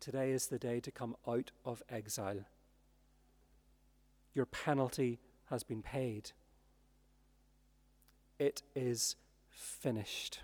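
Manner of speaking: soft, tender tone. Speaker voices him speaking to listeners: retelling tender words. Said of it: "saying to you tenderly".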